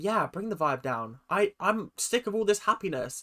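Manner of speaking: ordinary talk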